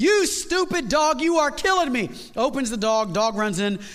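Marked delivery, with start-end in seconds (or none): 0.0-2.1 exasperated, upset yelling, pitched high. Telling a story, the dog's owner yells at his dog; retelling a yell. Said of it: "He's yelling at the dog".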